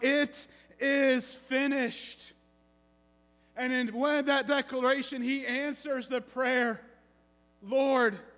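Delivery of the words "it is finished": acted, weary but triumphant outcry. Retelling the final words from the Roman cross: acting an exhausted, triumphant cry. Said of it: "in complete exhaustion, but in absolute triumph, he cries out".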